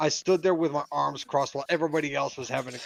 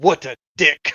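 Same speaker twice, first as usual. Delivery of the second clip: put-on Russian accent, louder; 10 dB louder than usual. Describing the end of a movie, quoting Tim Curry's line: Tim Curry's Russian accent. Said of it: "he says in a Russian accent".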